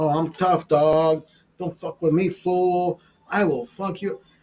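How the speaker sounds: put-on, mock tough street talk.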